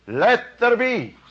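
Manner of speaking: urgent, driving delivery. Talking about spiritual tones, speaker intones the phrase with driving urgent energy. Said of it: "Can I hear the life impulsion, you see? The enormous urge and drive".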